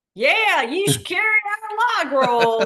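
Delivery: very high, loud, stretched-out Southern US drawl. Speaker retelling slipping into a client's accent while pitching an account, southern accent. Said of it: "has a very southern accent".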